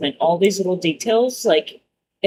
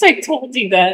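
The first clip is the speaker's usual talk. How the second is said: usual speaking voice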